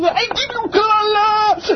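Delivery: drawn-out fake scream, pitched high.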